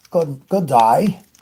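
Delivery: very loud, poor put-on Australian accent. Greeting someone good morning, then good day: very poor australian accent. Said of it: "probably a very poor version of what we call an accent".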